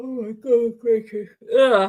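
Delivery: speech spoken mid-yawn. The speaker catches themself yawning partway through their talk, yawning while speaking. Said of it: "why am I yawning?".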